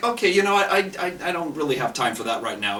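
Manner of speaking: ordinary delivery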